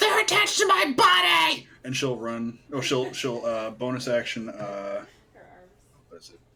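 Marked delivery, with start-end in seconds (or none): 0.0-1.7 shrill, very high, loud shouted yell. Playing a character who refuses to drop her arms: shouting in character. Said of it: "Ree will yell back".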